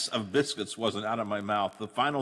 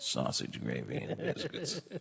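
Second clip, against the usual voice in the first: whispered under the breath, hushed and breathy; 3 semitones lower, 7 dB quieter than usual. On air, announcing he will whisper the next words: whispered. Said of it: "I'm going to whisper this".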